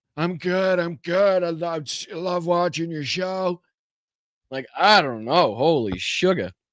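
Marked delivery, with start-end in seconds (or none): 0.2-3.6 mock sick, weak old voice, pitched higher. Mocking how Trump sounded on a phone interview: imitating Donald Trump sounding sick. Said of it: "That don't sound like Donald Trump to me".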